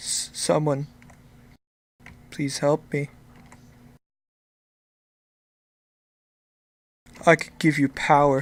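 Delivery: feeble, faint, weak, barely-there voice. Running a tabletop game, an unseen voice calls out to the players: faint, weak voice. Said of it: "you hear a faint voice, weak, cry out".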